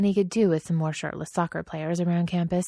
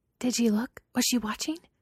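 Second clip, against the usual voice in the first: low, hushed whisper; 6 semitones higher than usual. Stiles speaks to Danny in class, in a low whisper. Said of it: "Stiles drops her voice into a low whisper".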